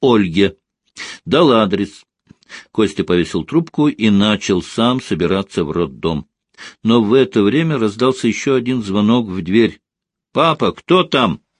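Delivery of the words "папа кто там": high-pitched voice calling out loudly. Hearing the doorbell, Kostya calls to his father from the other room, shouting. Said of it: "крикнул Костя из комнаты".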